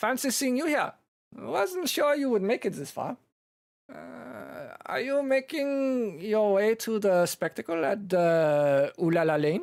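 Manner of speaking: put-on very high-pitched German accent. A storyteller voices a familiar character greeting the players, German accent. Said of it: "so now they're just German".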